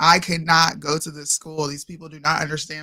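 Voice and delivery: ordinary talk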